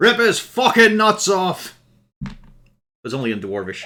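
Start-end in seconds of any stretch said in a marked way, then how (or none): 0.0-1.8 very loud, very high, drawn-out bellowing call. Game master voicing a voice calling out in Dwarvish during a fight, bellowing. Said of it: "a bellowing voice calls out".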